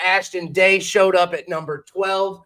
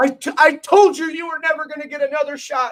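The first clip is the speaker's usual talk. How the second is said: mock crying put-on voice, higher; 8 semitones higher than usual. Retelling a wrestler's words after a brawl, imitating Patrick Hayes crying. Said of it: "we hear Patrick basically crying".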